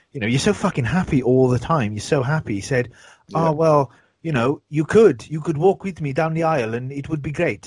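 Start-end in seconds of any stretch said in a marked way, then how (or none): 3.2-7.7 put-on South African accent, pitched higher. Quoting what he said, in a put-on south african accent. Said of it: "Is that a shattered South African accent?".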